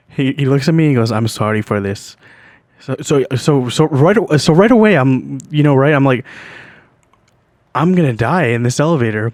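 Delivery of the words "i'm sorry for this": imitated Indian accent, lower pitch. Retelling what a man in the elevator said to him, in an Indian accent. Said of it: "he says it in an Indian accent".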